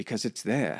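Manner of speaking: upper-class British accent.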